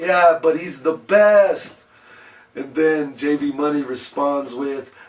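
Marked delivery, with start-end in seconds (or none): 0.0-1.8 acted-out, shouted yelling. Retelling a fan's shouted reply from the urinal: retelling a yell. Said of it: "he yells out".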